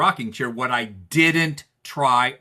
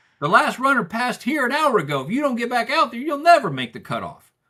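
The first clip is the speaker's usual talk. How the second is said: put-on very high-pitched hollering yell; 12 semitones higher than usual. Retelling what the guy behind the store counter said: imitating a clerk yelling. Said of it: "Why are you yelling at me?".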